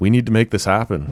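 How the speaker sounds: urgent, with a little panic creeping in. Retelling what he said back then, acting out a little panic. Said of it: "Little panic in his voice".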